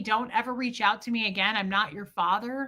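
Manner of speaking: ordinary delivery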